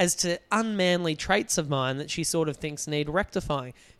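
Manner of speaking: normal talking voice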